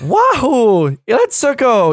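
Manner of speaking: very high, loud, swooping video-game voice, wahoo stretched. Answering that Mario has a voice: Mario voice. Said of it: "that's a fucking voice".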